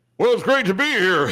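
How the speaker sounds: put-on old-school radio announcer voice. Recounting what Al said on arrival; Al's radio announcer voice. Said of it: "it's that I'm an announcer voice".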